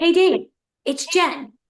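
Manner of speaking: play-acted abrupt, sudden, high-pitched shout. Retelling what a friend suddenly shouted while chatting: imitating Danielle shouting. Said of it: "all of a sudden she shouts".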